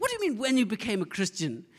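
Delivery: put-on posh, proper English accent, swooping. Quoting his gran speaking to him, in a good english accent. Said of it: "speaking with good English accent".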